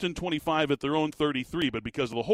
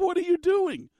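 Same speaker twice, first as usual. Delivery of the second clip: mock very high-pitched scream of disbelief; 4 dB louder than usual. Retelling watching a football game on TV: retelling screaming at the TV. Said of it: "I'm screaming at my television".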